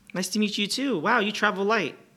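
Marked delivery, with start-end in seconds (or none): 0.9-1.9 dry, mocking, sarcastic delivery. Greeting a new arrival with a huge case in a scene: sarcastic. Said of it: "I was being sarcastic".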